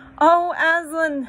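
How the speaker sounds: very high, very loud, frightened yet glad cry. Two children see Aslan standing before them at sunrise; crying out, frightened yet glad. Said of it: "cried both the children, staring up at him, almost as much frightened as they were glad".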